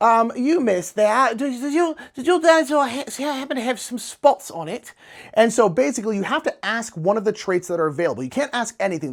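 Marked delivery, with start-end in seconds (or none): 1.4-4.9 fake British accent, pitched up, stammering start. Explaining a dinosaur guessing game, asking a player in a put-on British accent. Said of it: "speaking in British accents".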